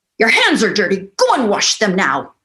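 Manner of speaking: play-acted, emphatic, fast, swooping, urgent commanding tone. Acting out a woman's order the way she hears it, mock-commanding. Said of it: "it's emphatic, it's urgent, and it's commanding".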